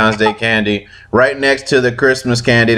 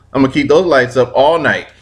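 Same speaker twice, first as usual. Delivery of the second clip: ordinary talk, nothing marked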